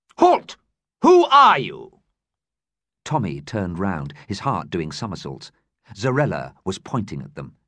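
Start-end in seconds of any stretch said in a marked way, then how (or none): 0.2-2.0 very loud, very high, ringing steely voice. A woman calls out across the vast hold to two people, in a steely ringing voice. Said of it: "a voice of steel rang through the vast hold".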